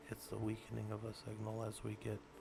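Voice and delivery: very quiet, dying away to near silence. Teaching his college students about signal weakening, he speaks fading to very quiet. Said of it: "I know you guys couldn't hear me. I did that on purpose".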